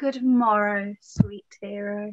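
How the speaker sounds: low, sickly, tuneful delivery. Greeting Hero as she arrives: speaking in a sick tune. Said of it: "do you speak in the sick tune".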